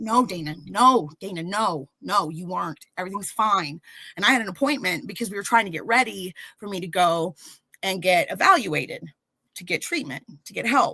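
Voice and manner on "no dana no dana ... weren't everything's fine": firm, adamant, insistent tone. Retelling how mom answered the panicked question: imitating mom insisting adamantly. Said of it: "my mom's telling me adamantly".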